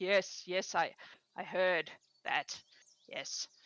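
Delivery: sighing. Morris answers after being told these are Andaline's people, sighing. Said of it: "Kind of sighs".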